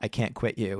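creepy, whispery tone, close to the ear. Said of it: "in a whispery tone".

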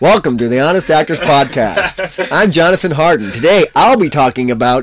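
very loud, very high fake American accent. Joking about a future podcast intro: put-on American accent. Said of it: "I've got an American accent".

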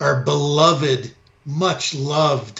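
slow, mocking, insincere, sarcastic tone. Asking the other speaker about the Prime Minister, sarcastic. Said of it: "and I say this sarcastically".

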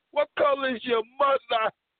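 squeaky put-on voice, pitched very high. Re-asking the question mid-conversation, in French Montana voice. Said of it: "What in my French Montana voice?".

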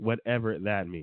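ordinary talk, nothing marked

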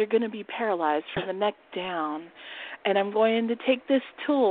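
play-acted seductive, come-hither voice. Retelling a role-play with a fake injection: imitating own seductive voice. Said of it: "real seductively".

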